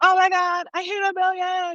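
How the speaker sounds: very high, drawn-out, thrilled, excited shriek. Acting out a big announcement of hitting a million: imitating a scream. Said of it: "I would have been screaming".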